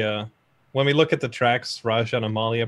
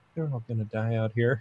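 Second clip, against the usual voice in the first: very quiet, hushed voice; 7 dB quieter than usual. A player's character turns to look at another character, speaking very quietly. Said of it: "just very quietly".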